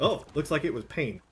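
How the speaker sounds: ordinary talk, nothing marked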